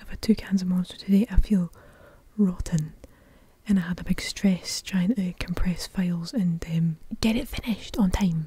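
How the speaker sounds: very quiet, hushed voice. Speaker records at night while the family sleeps, talking very quietly. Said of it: "I'm trying to talk really quietly".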